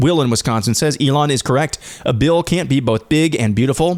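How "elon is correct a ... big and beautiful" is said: ordinary delivery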